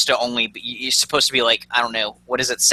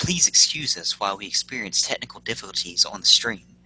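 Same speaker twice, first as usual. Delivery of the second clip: nice, silky-smooth, buttery voice; 3 semitones lower, 4 dB quieter than usual. Apologizing to stream viewers for technical difficulties, smooth buttery voice. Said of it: "talk to you in this nice, smooth, buttery voice".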